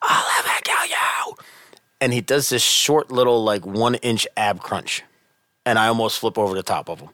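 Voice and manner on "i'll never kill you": play-acted scream done in a breathy whisper. Retelling what a kid being held down on the ground screamed: imitating a scream at top of lungs. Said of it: "he screams at the top of his lungs".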